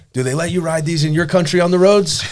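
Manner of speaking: very high police officer voice. Retelling being pulled over on a four-wheeler, imitating the cop. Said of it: "that was my best impression I could do".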